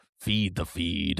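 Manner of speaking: deep voice sunk right down. Repeating a catchphrase back to a co-host, dropped, lowered voice. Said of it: "I gotta drop my voice every time I say that".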